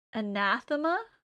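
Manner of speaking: anathema with stress on second syllable nath. Explaining where a weird word's stress falls: stress on second syllable of anathema. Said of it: "the stress is on the second A".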